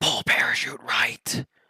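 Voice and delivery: soft whisper, very close. Imagining skydiving instructors giving instructions over comms, whispering. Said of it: "whispering comms in my ear".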